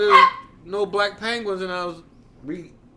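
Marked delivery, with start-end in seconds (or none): none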